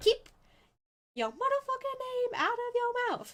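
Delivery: mock, very high-pitched, upset angry outburst. Retelling a scene where a character snaps at a warrior: imitating an angry outburst. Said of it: "she's really, uh, not happy right now".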